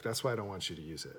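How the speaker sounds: ordinary talk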